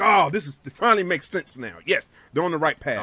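usual speaking voice

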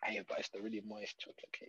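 put-on tempting whisper. Retelling being offered cake while dieting: imitating a tempting whisper. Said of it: "The devil is whispering".

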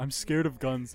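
put-on scared. Retelling a joking exchange with him during a game, acting all scared. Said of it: "like all scared".

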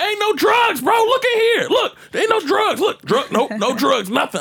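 very loud, very high, wild shouting. Retelling being stopped by a cop at home: imitating own past yelling. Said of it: "getting loud like a motherfucker".

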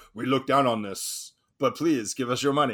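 low, soft put-on Dutch accent. Describing Amsterdam locals, imitating a Dutch accent. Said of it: "That's how Dutch people sound".

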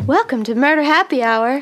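put-on, weird radio announcer delivery. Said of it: "like I'm a weird radio host".

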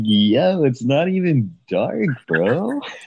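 high, slow, stretched-out chill surfer drawl. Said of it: "I go full, like, surfer voice".

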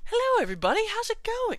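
very high, very loud, fake-excited talk-show host cheer. Describing staged podcasts, the speaker mimics a host's greeting in a fake excited voice. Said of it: "put on this fake face and a fake voice, excited".

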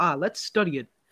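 normal talking voice

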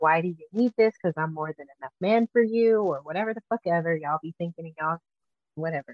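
fast, contemptuous, scornful, dismissive rant. Mocking what others say about being labeled a freak: mock-disdainful. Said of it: "you can hear the disdain in my voice".

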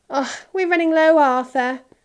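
words carried on a sigh. Mrs. Weasley peers into the flower pot and tells Arthur, sighing. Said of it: "she sighed".

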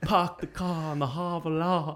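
put-on Boston accent. Mocking how people with a Boston accent talk: imitating a Boston accent. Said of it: "Like they have the Boston accent".

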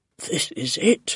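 whispered under the breath. Narrator reads a man rushing down the stairs, whispered under his breath. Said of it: "he whispered to himself under his breath".

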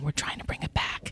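very quiet, breathy whisper. Retelling what a friend said across a lunch table: imitating a whisper. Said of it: "him sort of whispering across the table".

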